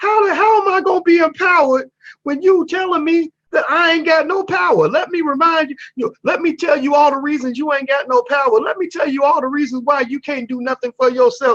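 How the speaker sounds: very high, country-style voice. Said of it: "he got that country voice".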